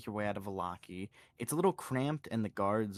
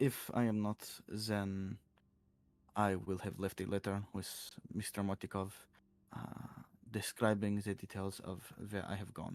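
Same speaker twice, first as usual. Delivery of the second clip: put-on speaking with a French accent; 3 dB quieter than usual. Answering another character's question about returning, a character speaks in a French accent. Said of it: "he's French now".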